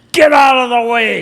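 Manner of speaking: high, loud scream. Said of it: "just screams at me".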